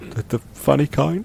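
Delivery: slightly scared. A player speaking in character during a tabletop game, a bit afraid. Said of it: "kind of like afraid a bit".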